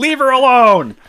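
put-on yelling voice. Retelling another speaker's story of yelling at birds: imitating someone yelling.

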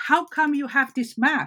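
put-on yelling soldier voice. Retelling a soldier at a checkpoint questioning a map: imitating a soldier yelling. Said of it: "basically started yelling at him".

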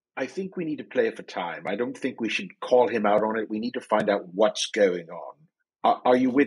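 hushed stage half-whisper tone. Speaking quietly in character to a companion about playing for time: very hushed tone. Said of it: "in a very hushed tone".

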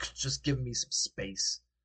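tearful, crying, annoyed and fed up. Voicing a character who walks over, still crying: crying, exasperated and annoyed. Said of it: "she is clearly exasperated and annoyed".

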